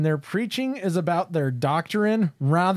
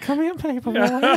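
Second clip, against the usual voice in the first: put-on high-pitched, shaky old-man voice; 7 semitones higher than usual. Trading Family Guy voices with the other speaker, doing a shaky old Herbert impression. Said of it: "The old guy. The old shaky".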